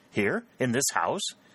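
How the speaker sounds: sudden, startled, high outcry. A son, told by his mother they will arrive any minute: startled exclamation. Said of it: "he exclaimed".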